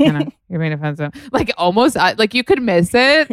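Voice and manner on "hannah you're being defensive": put-on mutter under breath, lower, faster. Speaker retells what Paige said to Hannah in an episode, muttered under breath. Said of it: "so under her breath".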